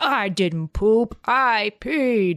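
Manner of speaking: put-on very slow little kid, toddler voice. Retelling a video of a toddler on the potty: imitating a toddler. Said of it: "the toddler sitting on the potty and he's like".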